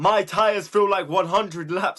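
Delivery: play-acted shrill, high, loud radio-style shouting. Retelling what a always-shouting guy said during a race, imitating his shout. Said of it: "it was all in bold exclamation marks".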